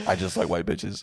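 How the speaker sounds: normal talking voice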